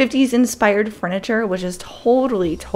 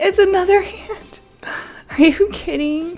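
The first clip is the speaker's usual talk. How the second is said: very high-pitched, sobbing in frustration; 10 semitones higher than usual. Streamer hatching a pet gets another ant, frustrated mock crying. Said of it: "I'm crying right now".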